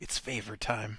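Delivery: whispering. Leaning down and nudging another character, the player character whispers. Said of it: "nudge Tarnum and whisper".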